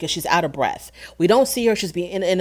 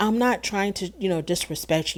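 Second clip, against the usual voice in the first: small, soft, hushed little voice; 2 semitones higher, 6 dB quieter than usual. Retelling an argument at a lunch table, imitating Whitney's soft voice. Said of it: "how she gets into her little soft voice".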